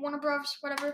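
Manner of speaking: usual speaking voice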